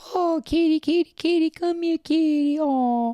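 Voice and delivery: high, sweet, sweet-talking cooing voice. Calling a kitty to come here, in a sweet-talking cat voice. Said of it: "you can call it a cat voice".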